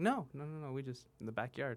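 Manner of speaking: mock perfectly unruffled, calm, even voice. Retelling a relative's answer to a question, imitating a calm reply. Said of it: "Why are you saying it so calm?".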